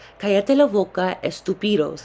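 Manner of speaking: normal talking voice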